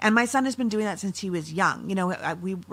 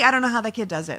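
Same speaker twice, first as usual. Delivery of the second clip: ordinary talk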